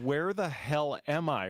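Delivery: plain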